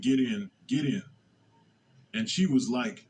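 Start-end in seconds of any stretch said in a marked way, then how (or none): 0.0-1.0 mock whispering. Retelling urging a girl into the car: retelling a whisper. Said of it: "I kept whispering".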